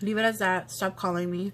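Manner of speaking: plain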